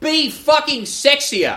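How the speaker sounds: high, slow, laughing mock scream, stretched out.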